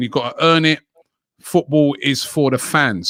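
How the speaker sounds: ordinary talk, nothing marked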